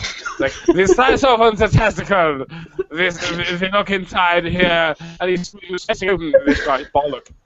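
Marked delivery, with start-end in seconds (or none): 0.7-4.9 put-on stock mad-scientist German accent. Retelling a man's testicle dissection demonstration, in a stereotyped mad scientist voice. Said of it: "mad scientist voice".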